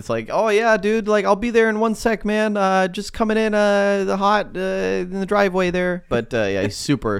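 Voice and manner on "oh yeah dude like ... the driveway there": put-on, very strong Canadian accent, higher, slower. Speaker imitates a man who is late to a tournament, super canadian accent. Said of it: "He sounds super Canadian".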